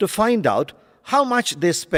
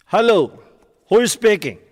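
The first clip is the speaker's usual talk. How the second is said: curt, impolite, loud falling tone; 3 semitones higher, 5 dB louder than usual. Answering the phone in a lesson's example call, with rude falling intonation. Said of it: "In falling intonation to create a rude and impolite tone".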